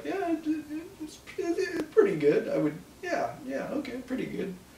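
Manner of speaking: put-on very high, unsure, faltering, stammering, unconfident voice. Retelling how she answered the odds question: imitating an unconfident reply. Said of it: "really the way she said it".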